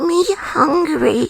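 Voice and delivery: put-on little toy voice. Doing a shy cute voice into the speaker: Labubu voice. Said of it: "it's my Labubu voice".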